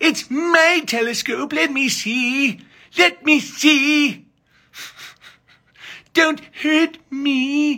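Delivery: very high, very slow, whiny voice. Acting out a stereotyped movie character's lines, put-on whiny voice.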